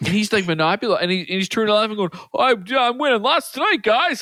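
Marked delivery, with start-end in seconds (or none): 2.4-4.2 put-on old man voice, higher pitch. Retelling a scene at a gas station: imitating an old man. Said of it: "Can you do that impression one more time?".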